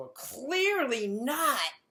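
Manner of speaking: mock shouted yell, very high and loud. Retelling how someone in the room answered: imitating someone yelling. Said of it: "And someone yells".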